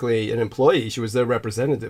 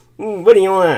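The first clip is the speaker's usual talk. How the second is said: raised, pitched-up put-on voice; 8 semitones higher, 7 dB louder than usual. Mimicking the tone someone uses to ask what you want: mock headache voice. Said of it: "like I got a headache kind of voice".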